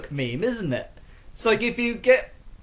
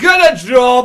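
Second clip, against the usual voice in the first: put-on very loud, raised, bellowing London accent; 5 semitones higher, 14 dB louder than usual. Predicting Jeremy Kyle's reaction, the speaker does a Jeremy Kyle impression in a London accent. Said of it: "I found it impressive I could do that accent".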